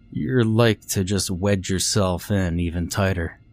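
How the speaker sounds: ordinary delivery, nothing marked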